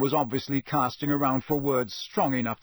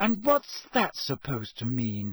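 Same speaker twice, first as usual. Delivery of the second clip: ordinary delivery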